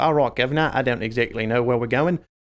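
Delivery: put-on Cockney accent. Showing how a game character's lines were read aloud: Skeleton Guru Cockney accent. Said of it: "for the Skeleton Guru, I had a Cockney accent".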